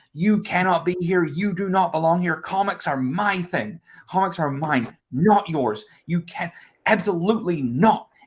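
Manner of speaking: acted-out furious screaming rant, high-pitched. Retelling screaming at an ex at a comics booth: imitating someone screaming. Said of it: "I start screaming at him".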